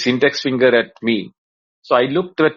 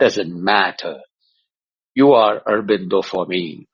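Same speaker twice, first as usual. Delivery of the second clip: deliberate, unhurried, low, slow voice; 5 semitones lower than usual. Retelling how Swamiji said his name, imitating Swamiji's voice. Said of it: "really good imitation of his voice".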